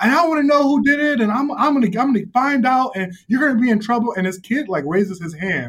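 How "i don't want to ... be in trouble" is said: acted yelling, much higher. Retelling lecturing the boys he was yelling at, retelling a yell. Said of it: "I'm yelling at them".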